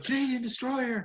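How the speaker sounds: excited commentator yell, high-pitched and loud.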